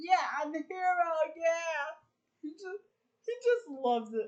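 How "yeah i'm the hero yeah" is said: gleeful, happy, boastful victory cheering. Retelling a movie scene, acting out the hero's line: imitating happy z. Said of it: "he's so happy".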